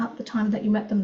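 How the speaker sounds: talking really fast, rattled off.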